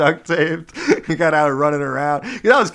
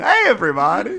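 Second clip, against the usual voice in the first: big, pitched-up cartoon doctor voice; 5 semitones higher than usual. Announcing an impression as one final joke, greet everybody in a Dr. Nick impression. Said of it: "I'm going to do an impression of the Doctor Nick from The Simpsons".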